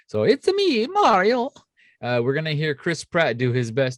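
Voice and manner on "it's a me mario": very high cartoon voice, pitched way up. Quoting the Super Mario movie's famous line: Mario voice. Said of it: "is just dubbed Mario".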